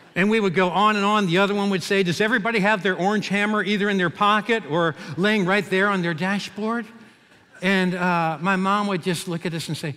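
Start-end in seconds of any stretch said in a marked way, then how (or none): none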